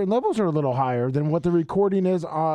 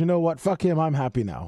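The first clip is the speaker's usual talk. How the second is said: ordinary talk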